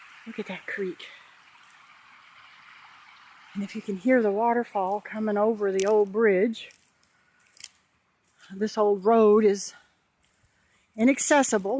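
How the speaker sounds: winded, out of breath. Speaker showing a creek and an old road, out of breath. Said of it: "My apologies for being out of breath".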